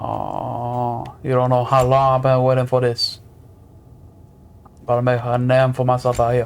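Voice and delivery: put-on Cajun accent. Trying out the accent another speaker wants to learn, in Gambit's Cajun accent. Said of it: "It's Cajun Creole, partly French".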